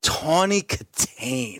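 low, slow, sassy purring voice.

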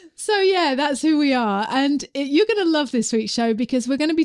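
genuinely happy, upbeat, cheerful tone. Podcast host introducing this week's show, sounding happy. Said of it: "i don't know why i'm sounding so happy".

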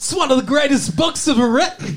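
very high, weird, odd-sounding voice. Reading out a quote from an article: Christopher Walken voice. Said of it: "I'm Chris Walken talking for Mister Travolta".

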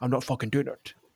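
soft, put-on Scottish accent, film-star voice. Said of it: "Sean Connery probably just walks inside and goes".

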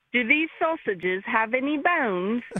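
badly done fake British accent. A caller repeats what their kid said, in a bad Mary Poppins British accent. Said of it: "Like real bad, like, you know, Mary Poppins status".

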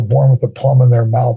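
plain

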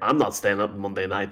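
ordinary delivery

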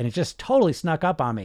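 ordinary delivery

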